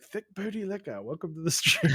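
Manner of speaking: put-on heavy New Zealand accent, laid on thick. Retelling how a streamer from New Zealand greeted a viewer: imitating a thick New Zealand accent. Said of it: "He had that thick accent. He's like".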